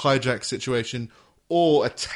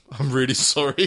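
put-on Canadian accent. Retelling how a man apologized, in his Canadian way. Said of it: "In his Canadian way".

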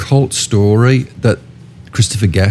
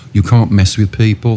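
ordinary talk, nothing marked

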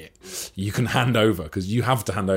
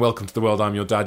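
normal talking voice

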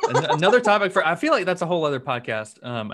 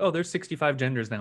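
usual speaking voice

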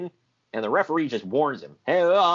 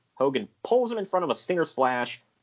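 usual speaking voice

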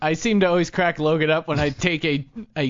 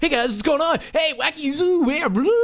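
very high-pitched, wacky, zany host patter; 10 semitones higher than usual. Talk radio host shows how a rushed host sounds, talking real fast and zany. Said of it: "if you talk real fast".

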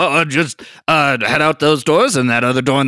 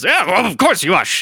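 orc-like voice, higher; 4 semitones higher than usual. Voicing a dragonborn woman answering the ushers: orc-like voice. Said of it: "apparently everyone sounds like an orc in this".

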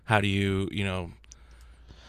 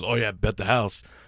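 usual speaking voice

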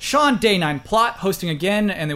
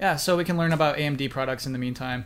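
soft, disinterested delivery. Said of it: "You sounded so disinterested in that".

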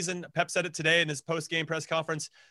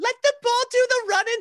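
bad put-on Irish accent, higher and louder; 6 dB louder than usual. Retelling a coach's advice: bad imitation of Brian Quinn's accent. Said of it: "see if I nailed his, his, nailed his accent".

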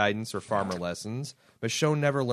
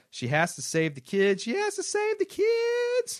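put-on very high, swooping, drawn-out "kids". Recapping an episode, requested to read it in the Arlene voice. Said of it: "Requested to read in my Arlene voice".

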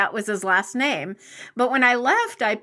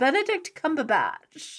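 put-on British accent with a swooping sing-song tune; 4 semitones higher, 4 dB quieter than usual. Speaker repeats an actor's name, in a british accent. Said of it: "If I say it with a British accent".

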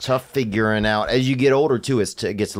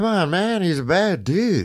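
put-on elderly politician voice, higher; 8 semitones higher than usual. Doing the voice for the audience to guess: Joe Biden impression. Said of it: "audience can guess whether I'm doing".

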